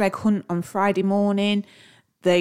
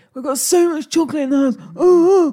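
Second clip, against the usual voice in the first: mock anxious fussing voice, stressed, pitched up; 8 semitones higher, 5 dB louder than usual. Teasing the other speaker for getting stressed about chocolate, in a mock-stressed imitation. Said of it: "I don't speak like that".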